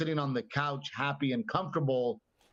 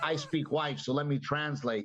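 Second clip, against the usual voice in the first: ordinary talk, nothing marked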